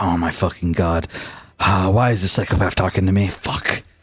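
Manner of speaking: muttering under his breath. Voicing a character annoyed at a table invitation: cursing under his breath. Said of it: "Vex curses under his breath".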